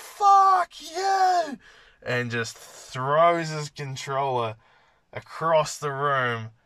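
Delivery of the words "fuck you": very high, shrill, loud scream, you stretched long. Recounting a 10-year-old raging over a PlayStation game, retelling a kid's scream. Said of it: "he screams at the fucking top of his lungs".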